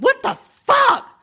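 very high, blurted-out, yelled outburst. Retelling sitting up in the dark after lying there: imitating own past yell. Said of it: "sat up and just yelled out loud".

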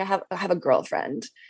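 mock low voice. Retelling what a guy said to you, imitating a lowered voice. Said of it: "he kind of went low with his voice".

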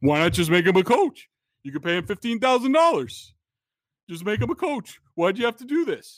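insistent talk-show pundit voice. Quoting a radio host's repeated complaint: Felger impression. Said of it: "I love your Felger impression".

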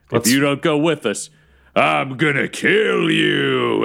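meaner, slow, rough, menacing tone. Asked by another player to say it meaner, repeating the character's threat in a meaner threatening tone. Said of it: "Can you do meaner?".

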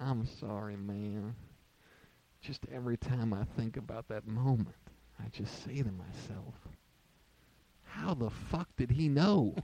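sober, serious, solemn and grave tone. Retelling how Dave apologized afterwards: imitating solemn Dave. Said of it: "then he got into solemn Dave".

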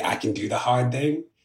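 ordinary talk, nothing marked

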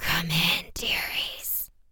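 slow, drawn-out, raspy, breathy voice near a whisper. A voice behind the door invites two girls inside, in a slow, raspy voice. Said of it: "heard from behind the door a slow, raspy voice".

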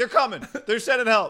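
shrill hollering, pitched way up high. Describing an NFL Films clip of Shannon Sharpe yelling at the crowd: imitating Shannon Sharpe yelling. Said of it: "yells at the crowd like".

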